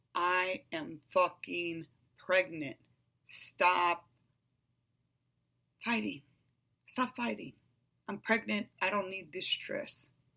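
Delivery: ordinary delivery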